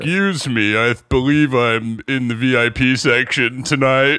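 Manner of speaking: deep, low-pitched voice. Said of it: "how deep can you go".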